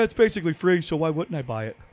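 self-justifying, self-excusing tone of voice. Joking about selling all their cards to buy cheap games, mock poor decision-making voice. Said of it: "That's my poor decision-making voice".

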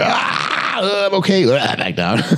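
mock mood swing, way up high then back down.

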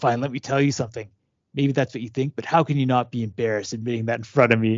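mock-angry, ranting put-on angry voice. Describing a father in a book page doing yard work, retelling an angry rant. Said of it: "he's just like so angry".

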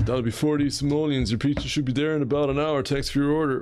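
laid-back pizza-guy voice.

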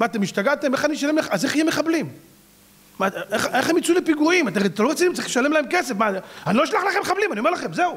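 mock aggrieved, high-pitched, indignant complaining tone. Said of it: "כאילו בא בתלונה".

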